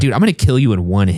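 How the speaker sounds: ordinary talk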